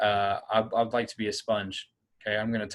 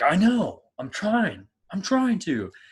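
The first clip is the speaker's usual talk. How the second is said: very high, fed-up, frustrated shouting; 10 semitones higher, 5 dB louder than usual. Speaker acts out a kid answering their dad during practice: retelling a yell back. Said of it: "You're yelling back".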